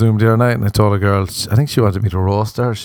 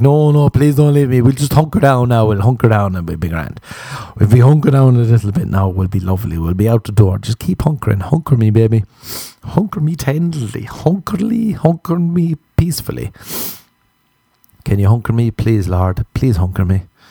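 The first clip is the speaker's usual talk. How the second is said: fake, put-on pleading, begging tone; 2 semitones higher than usual. Acting out begging a wife who is leaving: mock pleading. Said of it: "Imagine your wife is leaving you, be like".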